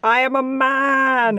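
high, very slow, stretched-out yell. Imagining a college roommate screaming out in bed: imitating a scream. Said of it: "your college roommate just screams out".

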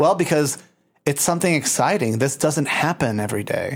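ordinary delivery

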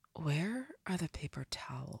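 very soft, hushed, sultry and seductive voice. Asked to say an ordinary question in a really sexy way: sexy. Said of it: "say it in a really sexy manner".

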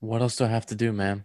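put-on tired-sounding voice. Recalling a movie line Kylo says to Snoke: imitating Kylo sounding tired. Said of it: "he sounds tired".

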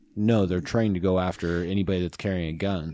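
normal talking voice

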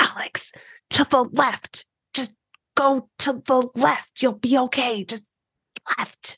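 hushed through gritted teeth. In a roleplay game, guiding alex over nearby chatter, hushed through gritted teeth. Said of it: "I grit my teeth a little bit, and as quietly as I can".

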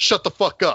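sudden, high-pitched, blurted shout. Retelling a film scene where Jake answers a lady, retelling a shout. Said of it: "he immediately just shouts".

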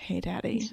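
very soft, sexy, sultry near-whisper. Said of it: "make it sexy and whisper it".

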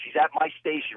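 ordinary talk, nothing marked

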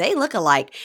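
normal talking voice

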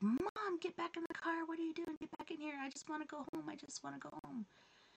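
put-on panicking kid voice, high and rushed. Retelling a child panicking in the car at night: imitating Nova freaking out. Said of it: "Nova's freaking out".

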